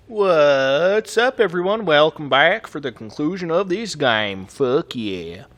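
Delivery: sudden, loud Southern accent, "what" drawn out. Welcoming viewers back for the game's conclusion, sudden southern accent. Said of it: "that southern accent came from all of a sudden".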